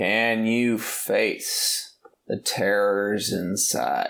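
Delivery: very slow, drawled carnival barker showman's voice. Retelling a film scene, imitating the slow-talking funhouse barker. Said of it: "the slow-talking funhouse barker, where he goes like".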